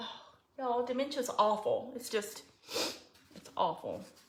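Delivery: soft, tearful crying voice. Speaking to the followers who helped with advice, the speaker is crying. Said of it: "now I'm crying".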